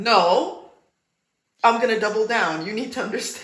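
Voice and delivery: pushy, know-it-all delivery.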